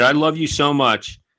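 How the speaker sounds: ordinary talk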